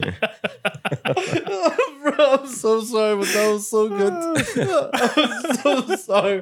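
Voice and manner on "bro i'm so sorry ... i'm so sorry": high, slow, helpless laughter while tearing up. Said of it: "my eyes are tearing up right now".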